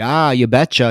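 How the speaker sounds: put-on Minnesota accent. Quoting a man's catchphrase while describing how he talks: Minnesota accent. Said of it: "that's very uh, Minnesota".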